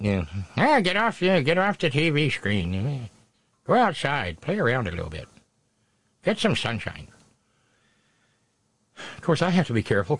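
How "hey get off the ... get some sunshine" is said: put-on grumpy, cranky old woman voice with a swooping tone. Talking about people watching streams indoors, the speaker puts on a mock cranky old lady voice. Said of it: "I'm sounding like a cranky old lady".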